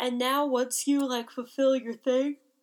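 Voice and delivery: speech spoken mid-yawn. Recapping a show episode with another speaker, yawning while talking. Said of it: "Excuse me, I'm yawning".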